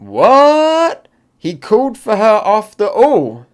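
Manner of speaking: high, loud, shocked squawk of disbelief.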